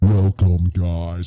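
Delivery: terrifying demon-like voice. Showing off a voice trick to the other speaker: terrifying demon-like voice. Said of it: "That literally sounds like the demon from Stranger Things".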